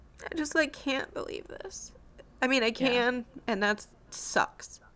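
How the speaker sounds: tearful, crying voice through tears. Speaker says they are ready but already in tears, crying. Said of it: "I'm already crying".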